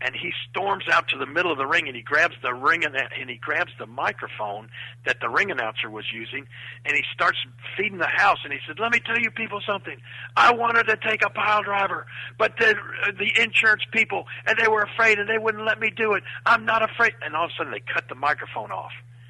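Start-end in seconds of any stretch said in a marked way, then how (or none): 8.8-17.1 acted, freaking furious, pitched-up rant. Retell how he grabbed the ring announcer's microphone and addressed the house, acting out someone furious. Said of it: "Jim Carrey was freaking furious".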